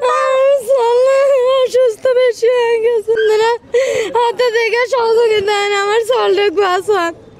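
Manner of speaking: crying, sobbing, halting voice.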